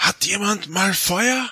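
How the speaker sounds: high whisper. Retelling how they whispered over to the others: whispering. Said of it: "ich flüster so rüber".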